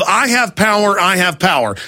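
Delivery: ordinary delivery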